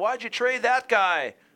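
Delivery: mock yelling. Acting out sports fans yelling at a general manager: imitating fans yelling. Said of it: "they're yelling at the".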